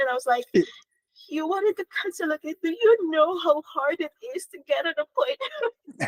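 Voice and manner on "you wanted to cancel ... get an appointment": tearful, distressed crying voice, raised pitch. Speaker recalling a cancelled appointment, retelling own upset crying. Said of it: "I cried, and I was so upset".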